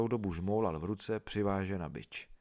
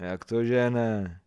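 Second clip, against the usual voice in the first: loud, slow, scornful, derisive mocking tone; 2 semitones higher, 6 dB louder than usual. A woman retorts to an old woman's remark, mocking. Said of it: "Odvětí posměšně".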